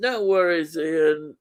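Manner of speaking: ordinary talk, nothing marked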